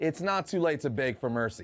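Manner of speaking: ordinary talk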